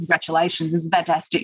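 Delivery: normal talking voice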